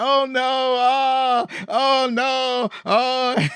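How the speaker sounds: put-on sobbing, very high and very slow. Retelling a scene where Dundee comes out crying: imitating Dundee crying. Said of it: "Dundee comes out and he's crying".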